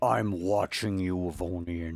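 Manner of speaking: threatening, menacing tone. Voicing a character who turns toward the viceroy: threatening tone. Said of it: "That sounded threatening".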